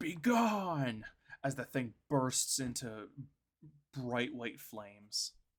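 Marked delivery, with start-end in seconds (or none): 0.0-1.0 loud, high scream, stretched long. Diving at the thing, he screams this as it bursts into flames. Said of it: "and just screams".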